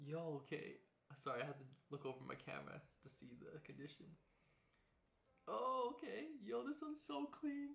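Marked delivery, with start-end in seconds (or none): 6.4-7.8 thrilled, excited, voice very high. Pulling a card on camera and checking its condition, excited. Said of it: "I'm so excited".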